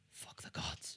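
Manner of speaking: whispering under breath. A player voicing Siggy as his mind snaps again, whispering under breath. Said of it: "He whispers under his breath".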